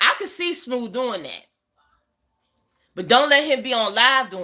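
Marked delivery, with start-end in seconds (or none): none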